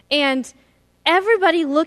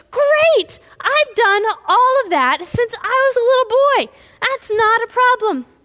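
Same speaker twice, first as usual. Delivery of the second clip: mock thrilled, eager, high, bursting excitement; 9 semitones higher, 5 dB louder than usual. Acting out a man answering after hearing the full list: so excited. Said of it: "and he's so excited".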